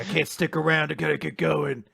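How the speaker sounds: rough, creaky, edgy hero voice.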